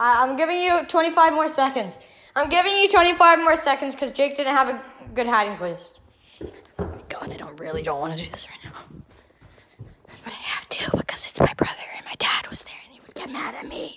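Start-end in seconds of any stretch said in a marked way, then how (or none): 6.8-14.0 hushed, lower whisper. Counting in a hide-and-seek game with their brother, whispering. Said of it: "I don't know why I'm whispering".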